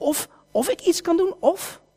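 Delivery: mildly irritated. Retelling a gospel story, answering the boy's father, acting out mild irritation. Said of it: "een beetje geïrriteerd te worden".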